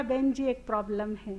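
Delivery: quiet, low whisper. Retelling what a man said softly into a woman's ear, retelling a whisper in the ear. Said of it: "धीरे से कान में बोला".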